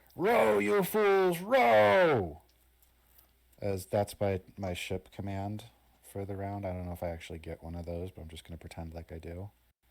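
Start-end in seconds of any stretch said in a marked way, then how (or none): 0.2-2.4 slow, high, very loud booming shout, "rows" stretched. Voicing a character ordering the rowers to row: Argus shouting orders. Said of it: "Argus is gonna shout for the rowers".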